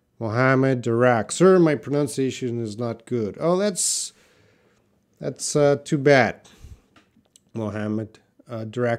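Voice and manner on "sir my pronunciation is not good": ordinary talk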